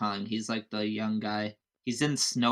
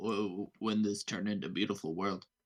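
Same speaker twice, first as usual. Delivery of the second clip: put-on gravelly voice, quieter; 2 semitones lower, 6 dB quieter than usual. Describing an interview of Vin Diesel: Vin Diesel impression. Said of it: "He's like".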